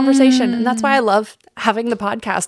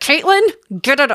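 words pushed out through clenched, locked teeth; 3 semitones higher than usual. Speaker imitates a woman telling her to get it off, imitating talking through teeth. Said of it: "talking through her teeth".

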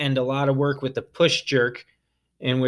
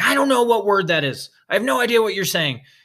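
pitched-up yell carried across a room; 8 semitones higher, 4 dB louder than usual. Retelling yelling back across the gym in confusion: retelling own yell. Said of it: "finally I yelled back".

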